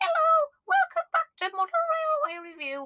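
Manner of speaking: very high, squeaky, swooping presenter-style voice. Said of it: "my voice was really squeaky there".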